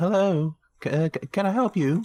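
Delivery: very high, stumbling, slow put-on lady voice. Voicing a lady who answers the door to the players: put-on voice of a lady villager. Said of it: "she's like".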